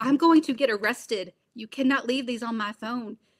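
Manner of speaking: mock fed-up, angry, exasperated telling-off. Speaker reenacts yelling at him over his voicemails, retelling an angry yell. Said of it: "yell at him constantly".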